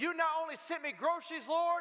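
extremely excited, ecstatic. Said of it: "She got more excited than ever".

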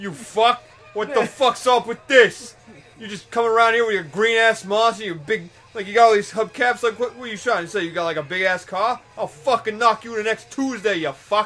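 put-on ranting delivery in a Brooklyn accent. Imagining Shaw getting knocked around, a speaker voices Shaw with a Brooklyn accent. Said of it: "all of a sudden he gets a Brooklyn accent".

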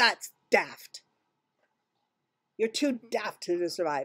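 contemptuous, scornful, dismissive guard voice. Voicing a gate guard scowling down at a player: scowling guard. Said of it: "He scowls down at you and says".

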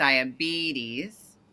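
diabetes with stress on the syllable be. Giving pronunciation notes on a word: main stress on be in diabetes. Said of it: "diabetes has a major stress on the first E".

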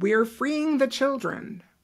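put-on high, derisive, sarcastic mocking tone. Quoting what a man said in a mocking tone, mimicking a mocking tone. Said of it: "in a mocking tone".

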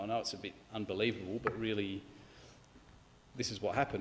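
sheepish, embarrassed, apologetic delivery. Imagining the Bible speaking apologetically, in a mock embarrassed tone. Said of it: "say it in an embarrassed sort of tone".

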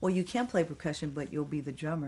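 ordinary talk

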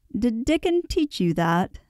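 laughing outright. The doctor questions the girl about her Yorkshire talk, laughing outright. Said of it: "laughing outright".

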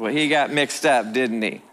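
ordinary talk

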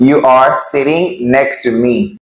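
normal talking voice

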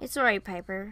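plain

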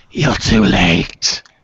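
loud, hoarse, rasping voice. Game master voicing a half-melted figure who turns toward the player: rasping voice. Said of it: "in a rasping voice goes".

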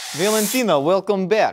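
terrible, bad fake Russian accent. Mid-conversation with others, speaking in a bad Russian accent. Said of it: "I'll stop doing the Russian accent".

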